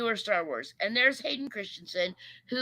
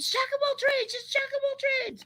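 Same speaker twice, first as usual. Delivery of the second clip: very high, excited, freaking-out shrieking cry. Retelling spotting an actor from the car: imitating own freaking out. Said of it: "freaking out in the car".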